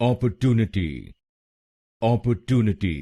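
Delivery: put-on American accent, "opportunity" with the "too" syllable stressed.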